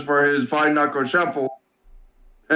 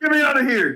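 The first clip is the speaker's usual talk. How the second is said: high-pitched, loud shout. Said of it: "He's like".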